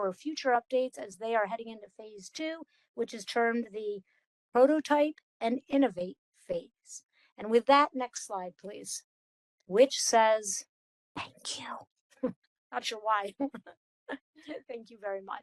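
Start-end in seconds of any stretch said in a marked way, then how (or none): 11.2-12.3 whispering, much quieter. A presenter reads the last slide aloud to the audience, whispered.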